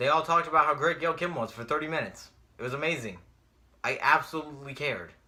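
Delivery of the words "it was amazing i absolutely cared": heavy sarcasm, meaning the opposite. Recapping a wrestling Hall of Fame induction segment: sarcastic tone. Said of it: "As you can tell from the tone of my voice".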